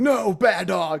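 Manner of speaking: scolding tone.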